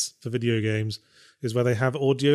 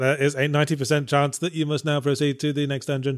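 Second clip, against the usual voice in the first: machine-like voice. Describing a game character who gives long dialogue, performing its line in computer voice. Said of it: "supposed to be like this computer voice".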